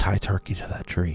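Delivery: very quiet, hushed, breathy whisper. A character stopping as she approaches a broken-down wagon, speaking very quietly. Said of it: "says very quietly".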